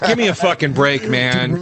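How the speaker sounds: ordinary talk, nothing marked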